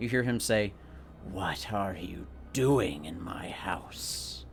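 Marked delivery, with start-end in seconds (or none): 1.2-4.4 very slow, low, haunting, echoing ghostly whisper. Dungeon master voices the house's owner confronting the players, in a ghostly echoing whisper. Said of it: "in this sort of ghostly voice that kind of echoes and whispers".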